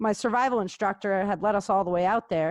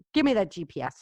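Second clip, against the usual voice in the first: put-on angry voice. Retelling grabbing a friend's GPS after a hike: retelling an angry demand. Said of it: "I was so pissed".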